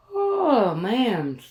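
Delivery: said through a yawn. Talking to viewers about plans for a day off: yawning. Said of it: "sorry I'm yawning".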